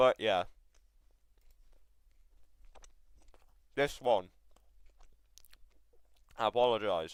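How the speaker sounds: talking with a mouth full of food. Going over a past video, then apologizing: talking with mouth full. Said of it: "My mouth is full".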